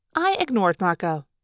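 usual speaking voice

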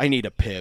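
exasperated, frustrated sigh into the words. A game narrator voices a frustrated character before he walks out: frustrated sigh. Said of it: "he sighs and he says".

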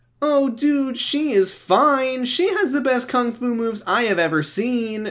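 eager, excited voice, very high-pitched. [name] joins the conversation with Kyle and Lori, speaking excitedly. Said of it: "[name] said excitedly".

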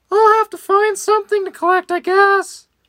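very high-pitched, cartoonish storybook character voice. Reading a story aloud, the speaker voices Henry's line in a Mickey voice. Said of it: "Mickey voice".

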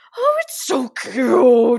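put-on booming, drawn-out, swooping, overexcited voice. Retelling a reaction to a post of puppies snuggling babies: imitating own cute-aggression voice. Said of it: "my voice kind of went to this".

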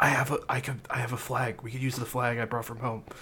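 hushed whisper. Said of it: "Kev, like, whispers".

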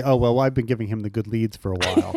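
secretive, confiding, between-us tone. Acting out what Williamson might tell an inquisitive cop: imitating Williamson. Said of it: "very Williamson".

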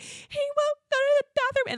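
put-on uncontrollable sobbing. Retelling breaking down in the bathroom, imitating own uncontrollable sobbing. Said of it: "uncontrollably sobbing".

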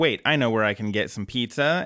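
plain

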